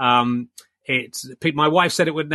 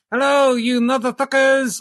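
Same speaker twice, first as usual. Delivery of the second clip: puppet voice like a ventriloquist dummy, very high; 9 semitones higher, 3 dB louder than usual. The host introduces his new co-host to video viewers, speaking as Ali the ventriloquist dummy. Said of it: "I think I'm getting pretty good at ventriloquism".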